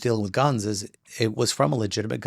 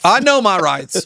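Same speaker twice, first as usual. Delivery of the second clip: loud, belted, put-on Southern accent; 8 semitones higher, 8 dB louder than usual. Quoting people who insist on their right to carry guns, southern accent. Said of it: "I know I said that with a Southern accent".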